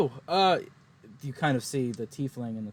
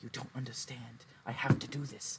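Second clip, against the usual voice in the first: whispered character voice, much quieter; 11 dB quieter than usual. Narrating a scene, the speaker voices Gabrielle talking to the tiefling, Gabrielle whispering. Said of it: "Gabrielle's kind of whispering to the tiefling".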